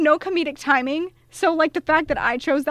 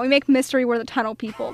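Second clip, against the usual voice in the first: ordinary talk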